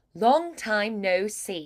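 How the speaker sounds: put-on British accent. Demonstrating a phrase for a learner to repeat, in a british accent. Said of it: "try it British".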